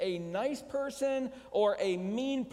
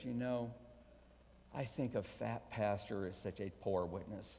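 hushed, confiding stage whisper under the breath; 10 semitones lower, 9 dB quieter than usual. Retelling a lady's remark at church about weight: imitating a half-whisper. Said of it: "she leaned in and whispered".

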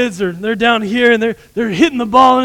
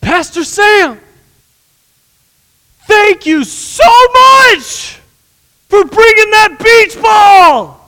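put-on very high, loud little kid yelling voice; 10 semitones higher, 6 dB louder than usual. Retelling a little kid thanking him over loud music; imitating a child screaming. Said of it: "so he is like screaming at me".

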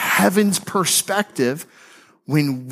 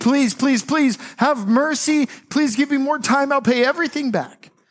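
high, desperate pleading voice. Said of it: "begged the king".

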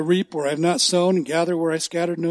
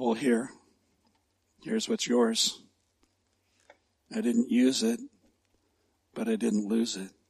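very low, slow, under-the-breath mumble; 7 semitones lower, 8 dB quieter than usual. Retelling a parable, the servant handing the buried talent to the master; acting out a mumble. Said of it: "and mumbled".

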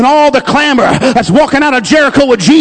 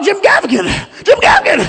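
easy, mild calling-out with swooping pitch; 5 semitones higher, 3 dB quieter than usual. Retelling spotting a comedian in a crowd: retelling own yell. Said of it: "just gotta yell out".

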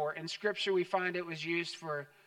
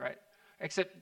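ordinary talk

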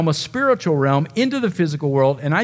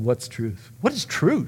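put-on sneering voice, lower and quieter; 6 semitones lower, 7 dB quieter than usual. Retelling a ruler's reply to Jesus's claim about truth: sneering Pilate imitation. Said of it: "Pilate sneers at Jesus' statement".

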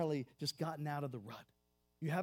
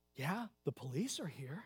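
hushed, secretive half-whisper. Telling a story, the speaker voices a little guy answering a man, imitating a half-whisper. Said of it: "The little guy whispers".

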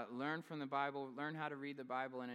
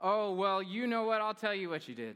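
put-on sass, played up, full of attitude; 6 semitones higher, 11 dB louder than usual. Quoting how she answers, adding sass for comedic effect, mock-sassy retelling. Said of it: "I'm adding sass".

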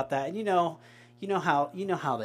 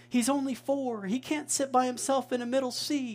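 very high, drawn-out, frantic yell; 9 semitones higher than usual. Retelling how mom yelled back to dad about a middle seat, retelling mom's yell. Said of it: "she's yelling back to dad".

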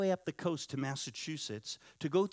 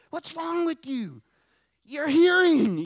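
mock shrill, very loud, very high excited outburst; 11 semitones higher, 12 dB louder than usual. Retelling the pastor's wife reacting to his hearing: imitating someone excited. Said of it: "She's all excited".

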